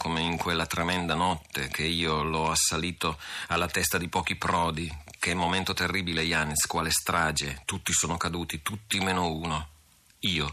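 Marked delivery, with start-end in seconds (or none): none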